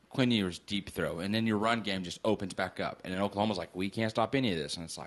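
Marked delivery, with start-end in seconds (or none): none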